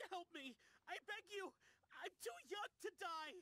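frantic, high, panicked begging. Someone begs the Wangsheng Funeral Parlor for help, panicked begging. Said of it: "Don't panic".

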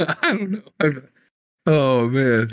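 slow, words broken up by laughter. Answering why they are laughing, laughing while talking. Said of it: "Why are you laughing?".

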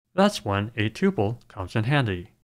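plain

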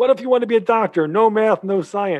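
very high, loud, mad, furious yelling. Retelling telling parents what classes were signed up for, imitating the father yelling. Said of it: "he's yelling".

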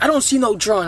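ordinary delivery

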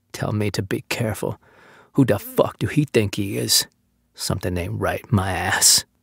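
quiet, low mumbling. After snapping at another man, he trails off, mumbling to himself. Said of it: "letting his voice trail off into a mumble".

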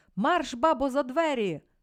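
shrill, loud screeching shriek. Reading the judge's line aimed at Olena in court: shrieking. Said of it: "заверещав суддя".

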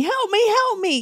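put-on screaming, pitched very high. Retelling a woman's cries as a thief grabs her car: retelling a scream. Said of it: "She starts screaming".

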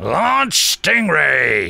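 raging, loud, rough barked yelling. Commander Shaw gives an order to Troy; yelled. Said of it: "he yelled at Troy".

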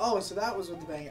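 obvious put-on realization, sarcastic. Recounting a reply to what Riley said, retelling a sarcastic remark. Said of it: "Obviously, sarcastically".

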